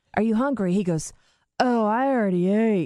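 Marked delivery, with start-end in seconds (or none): 1.6-2.9 put-on slurred speech, slower. Retelling a man's answer after he ate brownies, imitating slurred speech. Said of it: "And now he's slurring".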